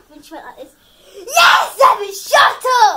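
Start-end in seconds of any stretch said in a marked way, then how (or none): 1.3-3.0 booming, drawn-out, slow teacher-style yell. Vlogging about science class, imitating a teacher shouting. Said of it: "our teacher just started shouting really loud".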